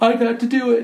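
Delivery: put-on, worked-up, eager excited blurt. Retelling how a former wrestler turned coach got excited: imitating an excited former student. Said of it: "he starts to get all excited".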